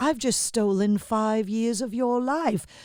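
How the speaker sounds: put-on soft British accent.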